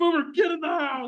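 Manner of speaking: play-acted very high, shrill, high-pitched holler. Retelling calling the dog inside while freaking out: imitating own yelling. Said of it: "and I'm, like, yelling".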